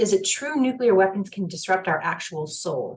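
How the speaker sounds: normal talking voice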